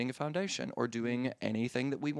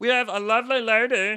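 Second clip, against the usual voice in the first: high-pitched, squeaky put-on voice; 10 semitones higher, 12 dB louder than usual. Introducing a guest on episode 220, high-pitched put-on voice. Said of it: "I did that voice again".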